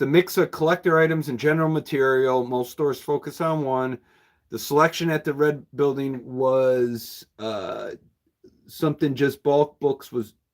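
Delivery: plain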